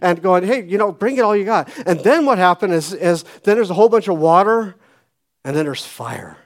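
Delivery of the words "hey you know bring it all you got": high, scornful, mocking, goading taunt. Retelling a prophet's jab at rivals: imitating a mocking taunt. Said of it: "just kind of making fun of these people".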